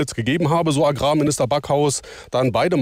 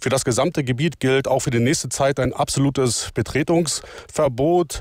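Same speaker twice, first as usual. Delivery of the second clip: normal talking voice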